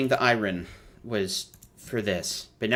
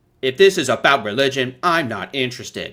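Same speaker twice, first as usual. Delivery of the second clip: cold, awkward, artificial AI voice; 4 dB louder than usual. Mocking a bad dub, the speaker quotes it in a cold, awkward ai voice. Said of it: "the most cold, awkward A I sounding voice".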